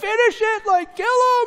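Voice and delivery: shrill, frustrated, loud yell, very high pitch. Describing how they react when enemies are only knocked out, retelling a yell. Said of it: "I'm yelling".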